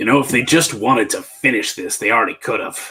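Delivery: raspy, rasping masculine voice. Voicing a stranger overheard in the dark: very deep rasping masculine voice. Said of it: "very deep, uh, kind of rasping masculine voice".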